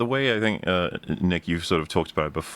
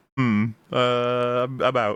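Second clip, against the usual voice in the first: put-on very slow, hedging, evasive delivery; 3 semitones higher than usual. Mocking someone who tries to weasel out: imitating someone weaseling out. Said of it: "and then just be like".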